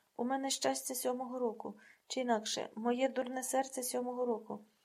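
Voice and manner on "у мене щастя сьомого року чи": plain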